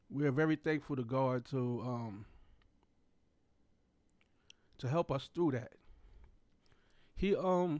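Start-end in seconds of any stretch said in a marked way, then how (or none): 0.1-5.7 choked up, voice catching with emotion. Thanking God for help through a hard time, choked up. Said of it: "still get choked up every time".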